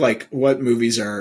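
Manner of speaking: ordinary talk, nothing marked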